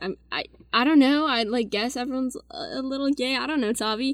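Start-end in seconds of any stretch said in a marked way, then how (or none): none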